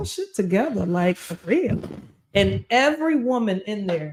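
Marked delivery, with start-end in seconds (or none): none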